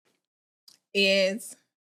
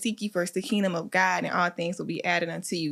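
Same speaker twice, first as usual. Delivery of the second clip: ordinary talk, nothing marked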